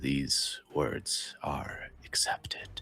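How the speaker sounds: quiet, powerful, weighty whisper. Voicing a voice heard in a character's mind: quiet but powerful voice. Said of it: "quiet but powerfully a voice say".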